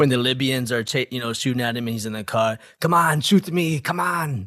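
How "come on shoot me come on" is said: action-movie tough-guy voice, pitched up. Imagining Marty played by Arnold Schwarzenegger: Arnold Schwarzenegger voice. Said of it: "if Arnold Schwarzenegger was Marty".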